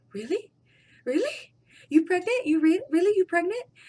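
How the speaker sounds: mock overjoyed, loud, excited, disbelieving astonishment. Retelling how he reacted to learning she's pregnant, imitating his excited reaction. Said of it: "And he got so excited".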